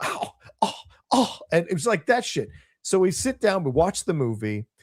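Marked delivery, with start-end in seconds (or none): 0.0-1.4 mocking scoff like a fifteen-year-old girl. Retelling a man at the movies who wouldn't move for people: mocking scoff like a teen girl. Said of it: "scoffed like a fifteen year old girl".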